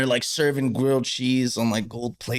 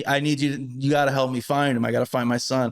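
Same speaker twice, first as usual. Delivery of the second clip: imitated old lady voice, freaking out. Retelling an old lady in a strange place: imitating her freaking out. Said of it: "she starts, like, freaking out a little bit".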